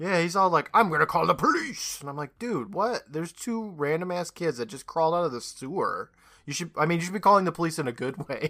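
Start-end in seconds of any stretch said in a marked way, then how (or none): 0.7-2.0 mock mean, cranky old voice, higher. Recapping a scene where an old security guard confronts two kids, imitating a mean security guard. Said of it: "He gets all mean with them".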